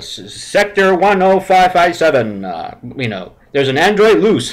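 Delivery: public-address intercom announcer delivery. Recalling the Disneyland ride, speaker quotes its intercom woman: Star Tours intercom announcer. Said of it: "woman that comes over the intercom and says".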